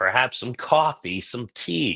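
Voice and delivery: faint New Jersey accent slipping in. Mid-sentence, the speaker accidentally slips into a Jersey accent. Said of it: "I sound like I'm from Jersey".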